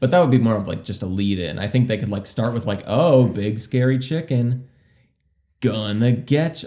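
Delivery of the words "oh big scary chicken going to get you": dry, slow, tongue-in-cheek sarcastic delivery. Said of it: "saying it sarcastically".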